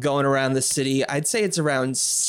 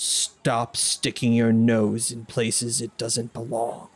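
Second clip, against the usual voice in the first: low, growled delivery; 4 semitones lower than usual. Game master voicing a woman who approaches the players: growling. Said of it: "she kind of growls out".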